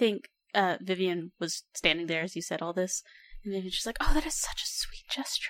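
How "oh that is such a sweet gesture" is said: quiet, private whisper under the breath. Voicing a character reacting to a pledge: whispering to herself. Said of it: "whispers that to herself".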